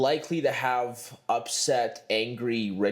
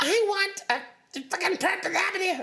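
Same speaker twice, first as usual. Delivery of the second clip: put-on angry rich wife voice, much higher pitch. Describing shoppers overheard at fancy malls, in a mock-angry rich wife voice.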